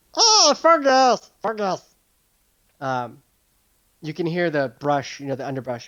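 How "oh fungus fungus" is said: very high, small creature voice. Voicing a small mushroom creature calling out to fungus: mushroom creature voice. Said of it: "he's like".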